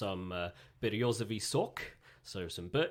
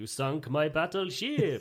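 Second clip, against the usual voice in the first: put-on Swedish-accented delivery; 6 semitones higher, 6 dB louder than usual. Having asked to try it, a speaker delivers a line in a swedish accent. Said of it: "Can I do a Swedish accent?".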